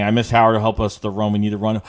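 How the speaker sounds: usual speaking voice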